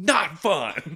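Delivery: exasperated, high, angry yell, temper snapping. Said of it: "and he just goes".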